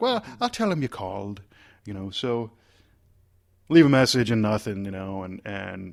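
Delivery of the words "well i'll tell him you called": put-on Irish accent, pitched a touch high. Retelling a phone call to an assistant: imitating Peggy Medina's Irish accent. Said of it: "has a, an Irish accent".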